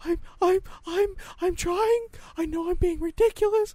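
put-on very high-pitched young child voice. Imitating how a kid talks while holding back emotions: imitating a kid's high-pitched voice. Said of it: "It's just like he's high-pitched voice".

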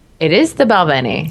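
stressed the, spoken with wide pitch range.

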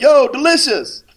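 shrill, booming, very loud, high-pitched holler. Acting out calling down the street: imitating someone yelling. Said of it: "I gotta yell it".

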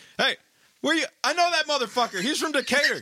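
acted-out shout. Imagining a passenger at the back of the plane: imitating someone shouting. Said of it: "from the back of the plane shouting".

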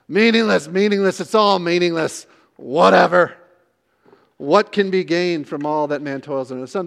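throwaway, dismissive, offhand reading. Showing how the verse sounds read as a rhetorical question: negative reading as rhetorical question. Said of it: "read this like a rhetorical question".

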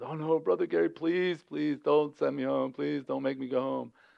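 put-on crying child voice, tearful and begging. Retelling how a kid begged not to be sent home: imitating a crying kid. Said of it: "he instantly starts to cry".

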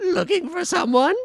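squeaky, very high-pitched character voice. Voicing a character calling out from the woods: Weevil Underwood voice. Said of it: "Please keep doing this voice".

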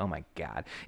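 low, soft, snarky aside. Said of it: "Toph is super snarky and be like".

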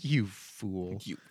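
low, mock scornful, gloating, laughing jeer. Retelling how a character laughs at He-Man while dodging lasers, acting out mocking laughter. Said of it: "starts laughing at He-Man like".

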